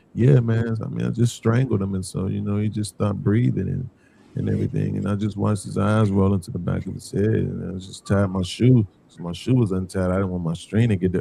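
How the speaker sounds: deep, dead-level, flat monotone drone, acted out. Speaker mocks the listener for sounding disinterested, imitating a monotone voice. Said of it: "in this mono ass tone".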